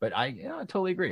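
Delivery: high-pitched voice dripping with sarcasm. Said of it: "I'm being quite sarcastic there".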